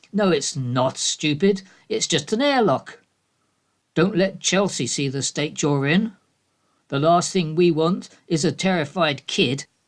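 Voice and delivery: scornful, dismissive, grim and nagging tone. A wife strides into the bathroom and retorts, grim and nagging. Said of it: "A woman strides into the bathroom, grim, face contorted to nag. / A woman strides into the bathroom, grim, face contorted to nag. / exclaims the wife. / exclaims the wife. / Ridicules the woman".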